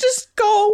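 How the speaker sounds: play-acted very high, uncontrolled wailing cry. Retelling your own words to him, retelling uncontrollable crying. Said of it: "I'm like uncontrollably crying".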